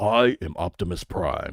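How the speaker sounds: very slow, drawn-out, every word stretched. Trying a voice that is really hard to do: Peter Cullen's Optimus Prime voice. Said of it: "But let me try it".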